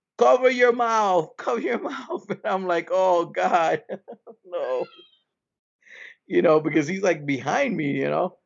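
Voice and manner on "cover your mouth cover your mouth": high-pitched, scolding yell. Retelling how a woman yelled at her coughing son: imitating someone yelling. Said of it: "Now she starts yelling at him".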